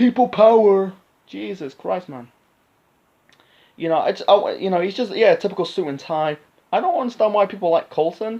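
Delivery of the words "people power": put-on raspy executive voice, higher and louder. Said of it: "the raspberry voice".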